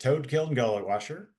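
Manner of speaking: normal talking voice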